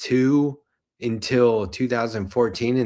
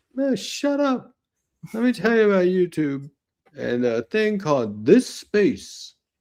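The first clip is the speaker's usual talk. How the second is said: put-on, high-pitched old-timer voice; 7 semitones higher than usual. Imagining telling stories forty years from now, in an old person voice. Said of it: "Is that your old person voice?".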